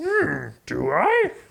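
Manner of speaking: high-pitched, musing, wondering-aloud character voice. Playing the groom at a wedding who cannot say I do: Yoda voice. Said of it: "No, Yoda".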